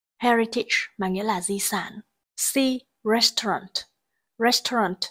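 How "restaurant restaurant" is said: restaurant said RES-taurant, first syllable stressed. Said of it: "trọng âm rơi vào âm tiết thứ nhất".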